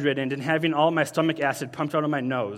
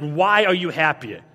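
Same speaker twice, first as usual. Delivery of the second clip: put-on angry boy voice, louder; 5 dB louder than usual. Retelling what a boy in science class asked: imitating an angry boy. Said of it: "he said this very angry".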